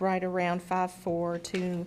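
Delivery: deliberate, slowed reading.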